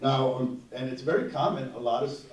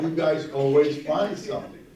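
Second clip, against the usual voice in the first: wry, needling, sarcastic little tone; 3 semitones higher, 6 dB louder than usual. Quoting what patients said about the sleep center: imitating a sarcastic remark. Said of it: "sarcastically, they said".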